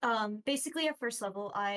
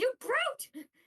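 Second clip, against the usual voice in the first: high-pitched, loud yelling. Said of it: "He's just yelling".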